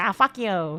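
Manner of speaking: acted cheeky, sassy voice. Retelling a run-in with an old acquaintance at a convention: retelling own sassy retort. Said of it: "I meant to sass him".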